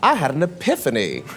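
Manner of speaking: usual speaking voice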